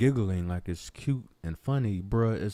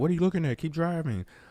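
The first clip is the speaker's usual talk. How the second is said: high, irritated, angry driver's voice; 9 semitones higher than usual. Imitating a driver who is mad at someone slowing to look: imitating an angry driver. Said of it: "you're blowing at and you're mad at".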